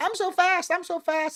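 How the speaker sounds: very high, slow, drawn-out glitching, looping voice. Comparing tech people to a rabbit stuck against a wall, malfunctioning rabbit voice. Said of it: "like just malfunctioning".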